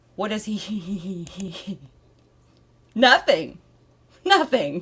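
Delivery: talking while laughing through the words. Addressing parents who have been waiting, laughing while speaking. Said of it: "I'm laughing because".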